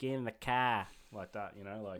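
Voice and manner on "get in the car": put-on Boston accent, higher and louder. Describing american accents to a friend, say it in a boston accent. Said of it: "the Boston's one like".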